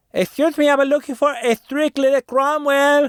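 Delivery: loud, very high-pitched yelling shout. Calling down a hallway in character, looking for someone: shouting down a hallway. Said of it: "I'm gonna shout".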